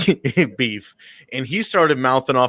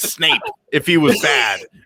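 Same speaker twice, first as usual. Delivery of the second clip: plain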